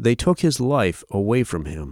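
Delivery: plain reading voice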